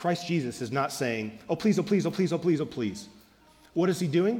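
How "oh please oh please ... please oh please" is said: put-on repeated begging like a child. Retelling how the youngest son Caleb begs for something: imitating Caleb begging. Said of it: "He doesn't do what my youngest son Caleb says".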